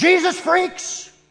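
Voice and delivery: high, jeering, hostile shouted insult. Retelling a cyclist insulting students outside a school: imitating someone shouting. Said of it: "he shouts at us".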